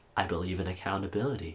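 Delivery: very maniacal, creepy, sinister, unhinged delivery. Retelling a congressional hearing, imitating a maniacal, sinister tone. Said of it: "her tone of voice was, like, very, very maniacal and, like, sinister".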